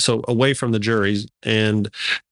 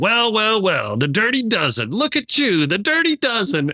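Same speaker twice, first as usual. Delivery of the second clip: sing-song, high, swooping screamed yell; 10 semitones higher than usual. Retelling a man wheeled into court who screams at the jurors: imitating Richard screaming. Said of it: "he starts screaming at the jurors".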